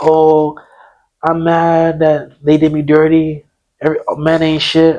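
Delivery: weepy sobbing. Retelling a friend's nightly phone call complaints: imitating someone crying. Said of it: "Crying like".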